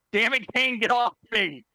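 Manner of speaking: angry, irritated wizard voice, pitched high. Voicing a grabbed wizard telling Kane to get off: angry wizard voice. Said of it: "Sounds like an angry wizard".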